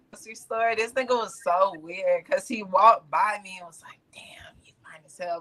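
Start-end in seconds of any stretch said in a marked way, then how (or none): 4.2-5.4 very quiet, breathy whisper, barely voiced. Retelling what a man at the grocery store said: imitating a whisper. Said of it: "like, whispered it".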